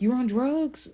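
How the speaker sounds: put-on high, angry, screaming voice. Recounting a phone call, the speaker retells the guy's dad screaming. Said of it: "the guy's dad was on the phone screaming".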